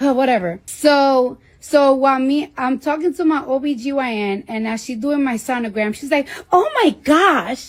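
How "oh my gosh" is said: put-on Staten Island accent, pitched higher.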